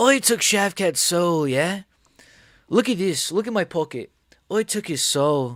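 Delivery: put-on Irish accent. Imitating a fighter boasting about a win, in his accent. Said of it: "I can't do a fucking, like, accent".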